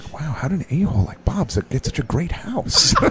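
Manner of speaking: imitated mumble. Describing a movie scene, acting out a character walking off, mumbling. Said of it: "you hear him mumbling".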